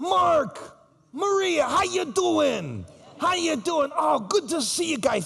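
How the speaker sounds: put-on very high, raspy old man with Italian accent. Remembering a generous old acquaintance, the speaker imitates Teddy's raspy Italian voice. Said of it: "he had this raspy Italian voice".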